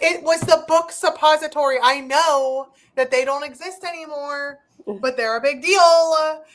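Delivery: high, defensive, hard insistence with deal drawn out. Retelling arguing with someone about a book: retelling getting defensive. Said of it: "getting really defensive about it".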